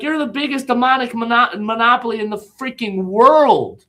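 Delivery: put-on yelling, high-pitched. Retelling what was yelled at the TV during congressional hearings: imitating own yelling. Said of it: "I'm yelling at the T V like".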